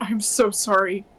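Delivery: trembling, struggling, forced-out strained voice. Voicing a character who is shaking and fighting himself: shaking, struggling apology. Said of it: "he's kinda shaking a bit, like he's trying to fight".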